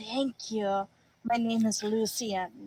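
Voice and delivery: whispered voice. Playing a character thanking a shopkeeper, whispering. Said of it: "I will whisper".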